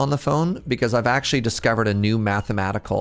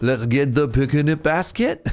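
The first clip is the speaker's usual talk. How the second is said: higher-pitched Quebecois cartoon voice; 4 semitones higher than usual. Continuing a Yogi Bear impersonation: Yogi Bear voice turned Quebecois. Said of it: "Suddenly went very Quebecois".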